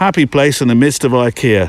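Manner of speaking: normal talking voice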